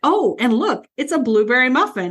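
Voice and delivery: light, jokey, teasing tone. Recounting a man's line from a scene she liked, retelling a joking remark. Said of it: "he kind of jokingly goes".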